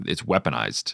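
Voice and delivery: ordinary talk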